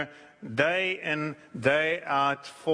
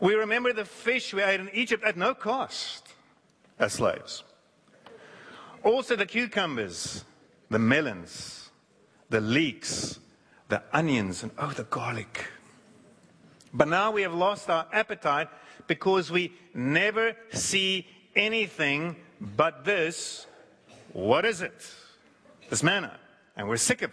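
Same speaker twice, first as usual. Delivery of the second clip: ordinary delivery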